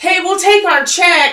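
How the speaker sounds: high, loud, slow, cheery sing-song calling voice. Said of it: "And she goes".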